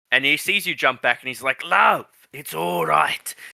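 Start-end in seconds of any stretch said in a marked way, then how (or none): 1.6-3.3 put-on slow, swooping Scottish accent slipping into Australian. Voicing a man reassuring someone who jumped back: attempted Scottish accent. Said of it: "I hate doing accents".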